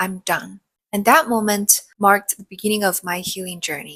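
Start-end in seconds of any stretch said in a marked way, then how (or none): 0.0-0.6 put-on whisper. Retelling leaving work at one am and standing in the shower: imitating own past whisper. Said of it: "And I whispered to myself".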